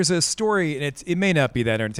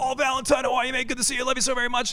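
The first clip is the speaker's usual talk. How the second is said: very high, friendly voice; 10 semitones higher than usual. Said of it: "That is dead on".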